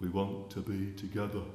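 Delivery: put-on broad Birmingham accent, laid on thick. Quoting a husband in an old tv advert, in a broad birmingham accent.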